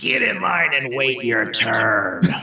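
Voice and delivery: high-pitched, commanding, projected voice. Tabletop player's character at the front door yells at the pushing crowd: booming yell. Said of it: "and yell".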